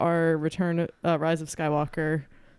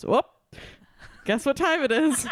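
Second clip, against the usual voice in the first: put-on very high, old-timer Midwestern voice; 9 semitones higher than usual. Retelling what a woman says when the clock hits nine, in an old Midwestern person voice. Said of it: "she says like an old person from the Midwest".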